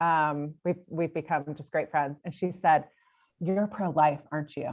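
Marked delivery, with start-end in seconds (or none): 3.4-4.7 mock hushed whisper, lower and quieter. Retelling a friend's question on a girls' weekend: imitating a low whisper. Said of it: "Like whisper, like her voice comes down kinda low".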